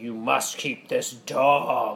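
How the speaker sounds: acted, slow, drawn-out, commanding pronouncement. Retelling a voice heard at the airport about keeping a dog, booming. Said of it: "I heard this booming voice be like".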